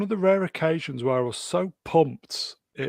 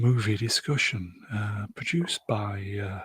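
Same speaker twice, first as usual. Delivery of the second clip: mock ASMR whisper, lower pitched; 5 semitones lower than usual. Reading out the credits after being asked to: put-on ASMR voice. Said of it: "read out the credits in your finest A S M R voice".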